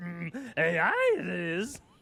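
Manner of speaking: put-on little old wise creature voice. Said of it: "a friend of mine that can say something".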